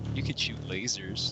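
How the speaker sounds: very quiet, muttered under the breath. Voicing a character remarking on another's skills: said under his breath. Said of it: "kinda under his breath".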